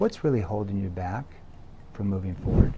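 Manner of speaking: gentle, soft, low, caring and empathetic voice. Role-playing leaning in to ask Sally something, soft lowered tone. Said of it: "I lowered my tone into that soft tone".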